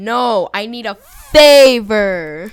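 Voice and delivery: slow, loud, mock insistent voice.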